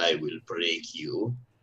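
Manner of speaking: really bad, clumsy, fake Russian accent. A character stares down someone who doesn't know his name; really bad Russian accent. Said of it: "in a really bad Russian accent says".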